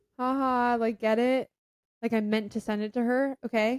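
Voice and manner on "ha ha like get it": put-on forced ha-ha laugh, slow. Retelling a plan to laugh it off while looking at someone: imitating own fake laugh. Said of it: "looking at her and, like, laughing".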